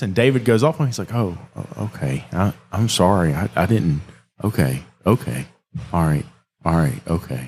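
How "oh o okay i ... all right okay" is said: put-on hurt, slow, deflated, faltering, stammering delivery. Retelling a customer's reply after being told off: imitating a customer's hurt feelings. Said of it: "I could hear the hurt feelings on the dude".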